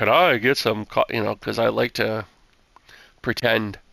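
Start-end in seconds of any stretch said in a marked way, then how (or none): 0.0-1.0 put-on, exaggerated extra deep low voice. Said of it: "I use that on Alex".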